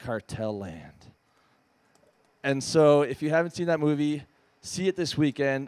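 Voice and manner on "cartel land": confiding, hushed stage whisper. Retelling how a drunk doc programmer half-whispered a film title: imitating a half-whisper. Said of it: "he whispered in my ear".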